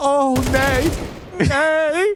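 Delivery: very high yelling, the word nay stretched out. Retelling a fallen delivery driver lying on the floor, retelling a yell. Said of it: "he's just yelling".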